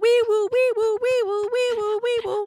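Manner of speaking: high, loud wee-woo siren wail. Retelling a scene, imitating an alarm siren. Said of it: "The siren should be go-, like".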